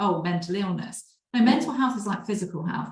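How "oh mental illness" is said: plain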